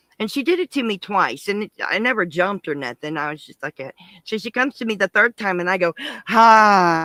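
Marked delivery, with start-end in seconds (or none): 6.3-7.1 very loud, drawn-out, sudden jump-scare hi. Retelling startling a costumed clown back: retelling an in-your-face hi. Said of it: "right in her face".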